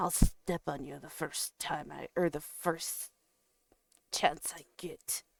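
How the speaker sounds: very soft, grumbling, menacing dragon voice. Telling a story, voicing the dragon as it speaks to a little spider: grumbling dragon voice. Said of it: "As it kind of grumbles".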